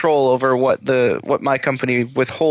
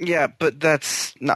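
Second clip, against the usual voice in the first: dismissive, exasperated, huffy tone; 2 semitones higher, 3 dB quieter than usual. Objecting to another speaker's point, with a huff. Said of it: "You didn't have to say it with such a huff".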